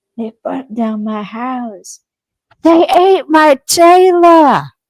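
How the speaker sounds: shrill, high-pitched, very loud yelling at full blast. A podcaster recalls a character who was always yelling, imitating Crowley yelling. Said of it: "cause it's like Crowley was always yelling".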